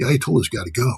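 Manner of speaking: soft stage half-whisper. Describing a persuasion tactic, acting out a wife half-whispering to her husband, retelling a half-whisper. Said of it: "the wife whispers in your honey".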